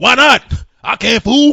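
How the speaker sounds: very loud, slow, drawn-out, high-pitched holler. Answering someone who says people can't eat gold: Mister T impression. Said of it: ""Mister T".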